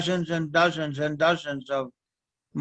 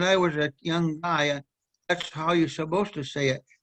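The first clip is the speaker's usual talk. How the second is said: ordinary delivery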